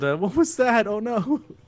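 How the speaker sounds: shouting. A player's character yells, then starts sprinting toward something, yelling. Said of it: "so I yelled".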